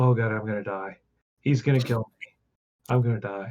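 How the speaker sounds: muttering under breath. A narrator voices a character before he steps back beside the gate: muttering under his breath. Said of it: "you guys hear him kind of under his breath".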